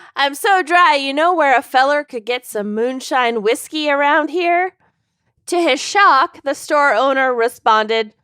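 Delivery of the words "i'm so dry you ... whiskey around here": put-on Minnesota accent. Narrating a story, voicing a character speaking to a store owner, doing a minnesota accent. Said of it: "I'm doing Minnesota".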